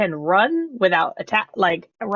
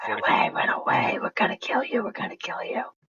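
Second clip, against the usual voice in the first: creepy, eerie whispered voices; 7 dB quieter than usual. Whispering at a creature while fleeing: creepy whispering voices. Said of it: "Creepy, creepy voices".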